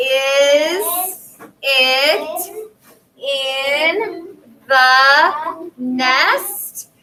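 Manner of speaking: rising, questioning tune climbing on nest. Reading a sentence aloud together with a class, using rising question intonation. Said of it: "how my voice kind of went up".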